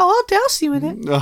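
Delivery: squeaky voice, pitched way up high. Joking back at the other speaker's grim plan, in a Minnie Mouse voice. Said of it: "Why do you sound like Minnie Mouse?".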